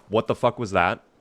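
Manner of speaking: ordinary delivery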